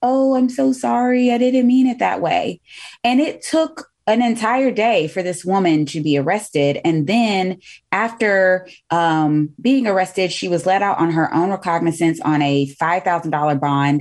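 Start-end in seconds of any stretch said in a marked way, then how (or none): 0.0-2.6 sweet, high, innocent little voice. Quoting a woman who went to her car after leaving; imitating a little innocent voice. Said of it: "in her, you know, little innocent voice say".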